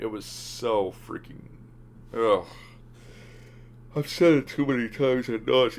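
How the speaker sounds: slow speech talking through a yawn. Speaker, tired after coming home from work, keeps talking while yawning. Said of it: "I'm sorry for yawning".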